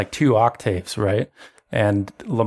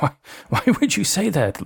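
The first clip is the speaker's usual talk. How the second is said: startled, stunned disbelief, shocked and pitched up; 6 semitones higher than usual. Voicing Lamar, who shrinks back shocked and pale: shocked. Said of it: "he looks shocked and pale, and he's like".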